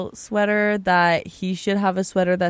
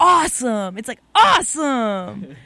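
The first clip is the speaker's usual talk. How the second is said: eager, excited burst, yelled out loud; 4 semitones higher than usual. Speaking passionately to a co-speaker about a favorite word, yelling. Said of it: "sorry for yelling".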